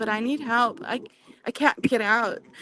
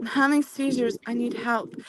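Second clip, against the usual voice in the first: plain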